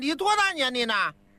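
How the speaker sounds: ordinary talk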